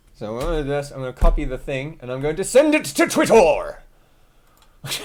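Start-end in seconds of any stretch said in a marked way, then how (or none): 0.2-3.8 loud, excited announcing. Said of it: "don't know why I'm talking like that".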